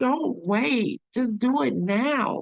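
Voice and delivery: earnest, high, slow begging tone. Retelling what she used to say to a woman in danger: imitating her own begging. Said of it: "I would beg her".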